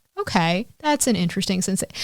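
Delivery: calm, mildly intrigued, unfazed, curious tone. Doing an impression of the other speaker calmly testing a cramp simulator: imitating the other speaker's calm curiosity. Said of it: "this would be my impression of".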